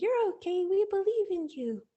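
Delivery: high, squeaky little mouse voice.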